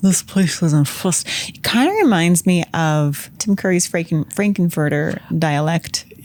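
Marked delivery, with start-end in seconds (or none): 0.0-1.6 mumbling as if mouth full of marbles. Imitating how a woman says a line, mouthful-of-marbles voice. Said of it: "sounds like she has like a mouthful of marbles".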